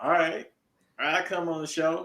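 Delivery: clumsy put-on Southern accent. Guessing how a phone call went, the speaker acts it out in a horrible Southern accent. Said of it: "That's a horrible accent".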